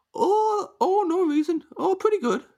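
put-on Upper Midwest accent. Answering questions as a guest from Fargo: put-on Fargo accent. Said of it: "do the Fargo accent".

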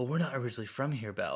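put-on English accent. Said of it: "speaking with English accents".

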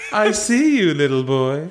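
put-on sinister, slurred, evil storybook witch voice. Playing a character while reading a scene with a partner, Grand High Witch voice. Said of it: "she sounds like the Grand High Witch again".

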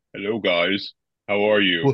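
artificially deep voice. Showing the others how the Iron Man voice sounds: deepened Iron Man voice. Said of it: "I'm just deepening my voice".

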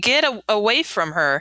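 usual speaking voice

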